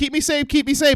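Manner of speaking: very high, small little robot voice. Quoting a robot character from a film: imitating Haley Joel Osment's robot character. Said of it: "Haley Joel Osment's little robot character is just like".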